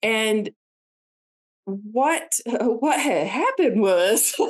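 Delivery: pained laughter running through the words. Recounting a painful childhood memory about family, laughing through pain. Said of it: "I'm trying laughing because it really hurts".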